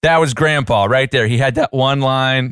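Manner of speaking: ordinary talk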